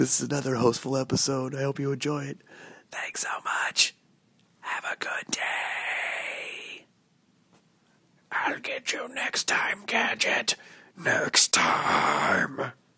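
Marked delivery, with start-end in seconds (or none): 2.9-12.7 whispering. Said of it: "I'm whispering".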